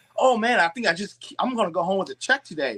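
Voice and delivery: acted excited hollering. Retelling what he told a man fishing there after a catch, acting out excited hollering. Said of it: "I was so excited".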